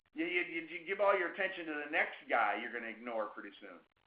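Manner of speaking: ordinary talk, nothing marked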